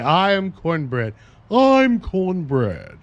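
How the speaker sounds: mock grand, pompous, very slow, high tone. Imagining him introducing himself at Harvard: mock-pompous. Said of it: "He'll say it like that, all pompous like".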